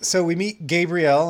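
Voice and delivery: ordinary talk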